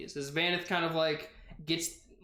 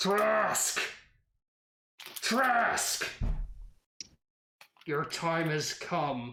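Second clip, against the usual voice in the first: metal figure voice, calling out; 2 semitones higher than usual. A game narrator voices a metal figure calling for trask, voice of a metal figure. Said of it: "you hear the voice".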